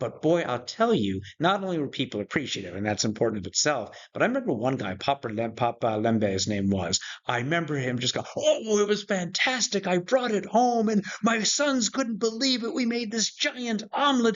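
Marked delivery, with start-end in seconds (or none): 8.4-14.4 mock thrilled, very high-pitched, bursting excited delight. Speaker recalls a man's reaction to a gift, imitating Papa Lembe's excitement. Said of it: "the excitement in his voice".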